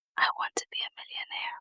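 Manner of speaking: fast, hushed whisper under the breath. A channel host recalls what she whispered to herself last year; whispering. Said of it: "Emphasis on the whisper".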